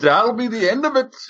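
attempted Irish accent. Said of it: "We tried Irish there".

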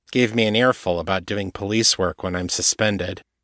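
usual speaking voice

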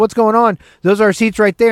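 mock calling out, yelled. Retelling calling up the stairs to a friend about taken seats: retelling own yell. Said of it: "yelling up to Sharisa".

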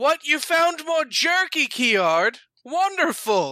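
very slow, drawn-out, high, far-off scream. Voicing a character screaming from a distance: Cecil screaming from afar. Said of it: "you just hear Cecil scream".

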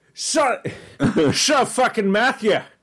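put-on Scottish accent. Imitating Gary telling Matthew to shut up: imitating Gary, Scottish accent. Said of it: "then how do you know he was Scottish?".

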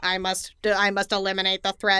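cold, flat, monotone, mechanical robot voice. Describing a character's choice, mimicking a cold robot: flat mechanical robot voice. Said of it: "Your robot impression".

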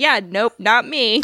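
ordinary talk

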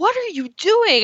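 high, loud yelling. Retelling standing up and yelling at the people in front, retelling a yell. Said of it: "I was just like yelling at these people".

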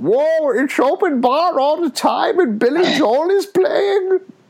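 very high-pitched comic voice. Imagining arriving at an afterlife with an open bar: Adam Sandler impression. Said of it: "That's the best impression you've ever done".

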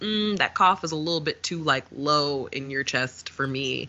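ordinary talk, nothing marked

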